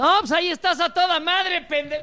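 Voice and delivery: sarcastic shout, pitched high.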